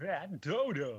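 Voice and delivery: put-on loud, high-pitched Brooklyn accent. Speaking a character's line, in a Tristan from Yu-Gi-Oh! voice. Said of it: "Why did he have a Brooklyn accent?".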